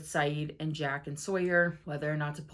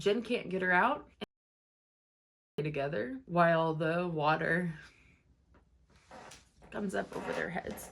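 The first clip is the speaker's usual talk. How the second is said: tearful voice, crying while talking. Recapping a scene with favorite characters, crying while talking. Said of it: "I was really not expecting to cry".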